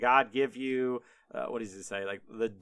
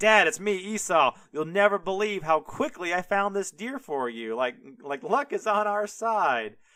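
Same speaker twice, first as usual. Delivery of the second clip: beaming, super-happy, proud, pitched-up boasting voice; 6 semitones higher, 4 dB louder than usual. Retelling Esau bringing his father the deer, the speaker is imitating proud, happy Esau. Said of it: "he's all proud and he's smiling and he's like just super happy".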